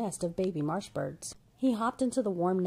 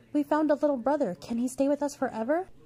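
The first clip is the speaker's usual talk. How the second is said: calling out loudly in a high pitch; 7 semitones higher, 3 dB louder than usual. Young friends call to their mother about a new companion, crying out. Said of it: "his new friends cried".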